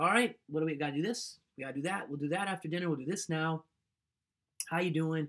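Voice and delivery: brisk, businesslike, no-nonsense delivery. Retelling what a nurse would say on coming in: imitating a no-nonsense nurse. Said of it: "Esther just had this no-nonsense love".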